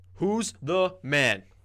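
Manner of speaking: very loud, high, full chest-voice shout. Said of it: "say it with your chest".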